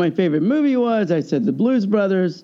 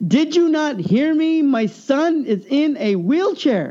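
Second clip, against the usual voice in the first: woman's voice, raised louder, high-pitched; 8 semitones higher than usual. Retelling how a lady repeated herself to the speaker, imitating her getting louder. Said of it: "she got louder".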